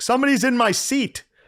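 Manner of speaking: mock shrill, piercing, very high, loud shout. Telling of a man on a plane yelling as he came down the aisle, retelling a man's yell. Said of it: "I heard him yell".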